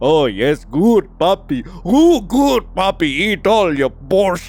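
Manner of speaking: over-the-top, exaggerated doting coo, full of praise. Reacting to a story while reading, exaggerated imitation of him cooing. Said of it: "I didn't expect him to be like".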